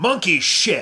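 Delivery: loud, full-throated, top-of-lungs bellowed yell. Recounting shanking a shot off into nowhere, retelling a top-of-lungs yell. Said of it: "at the top of my lungs I yelled".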